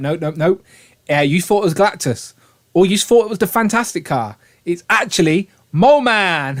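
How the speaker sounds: ordinary delivery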